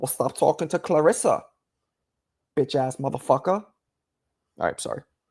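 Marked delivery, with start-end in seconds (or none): 0.0-3.6 scolding, laying-into tone. Acting out Johnny's wife scolding him about Clarissa: imitating Johnny's wife. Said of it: "I'm sure your wife doesn't sound like that".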